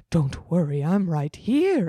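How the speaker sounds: put-on old, ancient ghost voice. Reading a story aloud, voicing Ellie's line: Ellie as an old ghost. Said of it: "I decided to make Ellie an old ghost".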